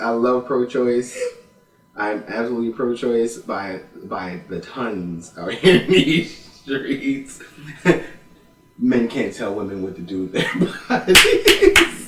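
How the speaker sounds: slow speech broken by laughter. Declaring support for pro-choice to the others, laughing while talking. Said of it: "I'm laughing while I'm saying it".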